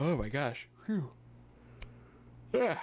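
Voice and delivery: exclamations swallowed by a yawn. Speaker fighting off the sleepies mid-conversation, yawning. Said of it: "I gotta stop yawning".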